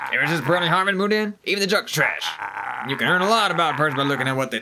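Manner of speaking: plain reading voice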